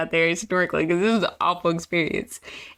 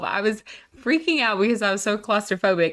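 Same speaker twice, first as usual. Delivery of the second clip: ordinary delivery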